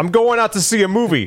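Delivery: put-on heavy New York accent. Retelling a scene from the first Ninja Turtles movie, doing Raph's voice with the accent. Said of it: "take it easy with the accent".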